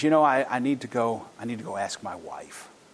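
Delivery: put-on sheepish tone. Retelling a customer pressed by a salesman, imitating him sounding sheepish. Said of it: "Said that rather sheepishly".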